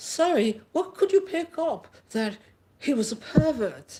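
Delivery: put-on London accent. Demonstrating an interview, the speaker voices the interviewer in a put-on London English accent. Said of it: "The speaker asks in her London, her English accent".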